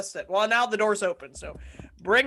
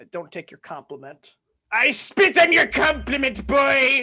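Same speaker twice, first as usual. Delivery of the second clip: offhand, stock put-on Scottish accent; 3 semitones higher, 4 dB louder than usual. Answering a long-delayed compliment on their hat: random scottish accent. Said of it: "just doing a random Scottish accent".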